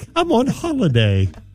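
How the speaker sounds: vague, generic, put-on British accent. On-air hosts joking about accents, one tries a generic over-the-pond accent. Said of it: "it's the over the pond accent".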